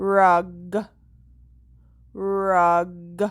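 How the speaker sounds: the word said slowly and drawn out. Showing a learner how to say a word to hear its last sound: saying the word slowly. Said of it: "Say it slowly to find the very last or the ending sound".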